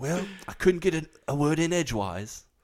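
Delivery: put-on British accent. Discussing a movie, the speaker quotes a character's line in a British accent. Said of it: "You're really using your British accent now".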